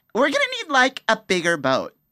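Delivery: very high, swooping put-on valley girl voice. Doing a famous movie quote in a voice game: valley girl voice. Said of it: "I should do a valley girl".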